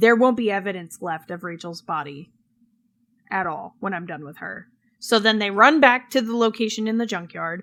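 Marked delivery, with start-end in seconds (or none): none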